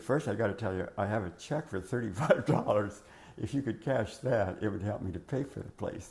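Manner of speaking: normal talking voice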